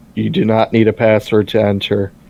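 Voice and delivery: level, mechanical, flat monotone. Retelling a scene where a character repeats back what he's told, monotone voice. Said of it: "He repeats back in a monotone voice".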